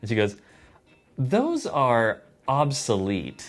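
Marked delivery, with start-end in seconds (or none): 1.2-3.5 mock, swooping, every syllable over-enunciated with contempt. Retelling a store girl's reply about VHS tapes: imitating someone enunciating disdainfully. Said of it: "she enunciated it as if to, like, really disregard, uh, us as humans".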